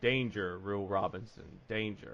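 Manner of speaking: low, soft, mechanical robot voice. Describing the end of a trailer, imitating the robot voice heard in it. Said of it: "you do hear a robot voice go".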